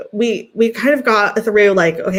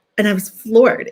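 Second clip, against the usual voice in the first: ordinary talk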